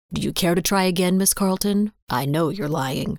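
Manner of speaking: ordinary delivery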